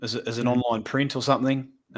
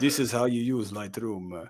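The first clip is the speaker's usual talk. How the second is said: bad, soft put-on French accent drifting into Spanish; 5 dB quieter than usual. Imitating someone teaching Lightroom, bad put-on French accent. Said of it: "that was more Spanish".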